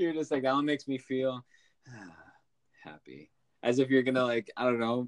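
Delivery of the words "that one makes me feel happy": glum, sorrowful, downcast delivery. Teasing the co-host about how they said it, the speaker is imitating a sad-sounding remark. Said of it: "that was so sad".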